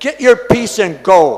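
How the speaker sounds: very loud, sudden, high-pitched voice. Retelling what a very weak man suddenly said: imitating a very loud voice. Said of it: "in a very loud voice".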